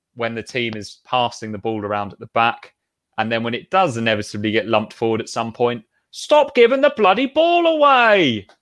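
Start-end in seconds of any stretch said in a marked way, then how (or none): 6.1-8.4 put-on shouted with Suffolk accent. Speaker recreating a fan's shout heard at Portman Road, Suffolk-accented fan shout. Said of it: "It's best in a Suffolk accent".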